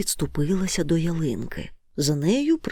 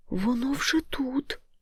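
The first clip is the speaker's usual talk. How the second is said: faint, barely audible, high little babbling murmur; 8 semitones higher, 5 dB quieter than usual. Narrator reading a little one's answer to a question, barely audible murmur. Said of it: "ледь чутно пролепетала крихітка".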